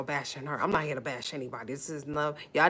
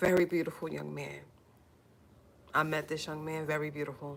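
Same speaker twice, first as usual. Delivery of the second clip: tearful, on the verge of tears. Asking for prayers for a young man and his family, on the verge of tears. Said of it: "I feel the tears coming".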